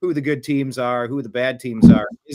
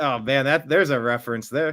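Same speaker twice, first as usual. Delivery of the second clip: ordinary delivery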